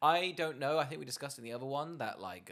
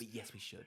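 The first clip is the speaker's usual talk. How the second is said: soft, unvoiced whisper. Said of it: "we're whispering right now".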